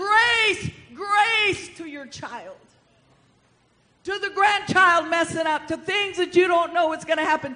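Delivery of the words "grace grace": high, ringing shout.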